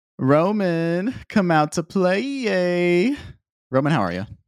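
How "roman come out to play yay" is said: high, very slow calling out with Yay stretched long. Calling his buddy Roman out to play, doing a Luther voice. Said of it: "That was a good good Luther impression".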